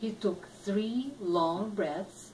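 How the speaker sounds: plain reading voice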